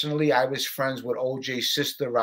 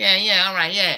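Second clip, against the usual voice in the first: "yeahs" said higher and louder; 6 semitones higher, 5 dB louder than usual. Showing how Tommy Karate sounded, which others compare to Mickey Mouse, do a Tommy Karate voice. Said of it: "that's how Tommy Karate sounded".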